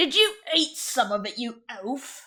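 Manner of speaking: pirate crewman character voice. Voicing a pirate poking at a player's character: voicing a pirate. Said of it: "And he starts poking at you too".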